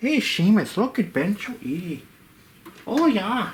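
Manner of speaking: put-on Irish accent. Bending tubing with a spring tool, calling to Seamus: put-on Irish accent. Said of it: "I'm doing this in an Irish accent".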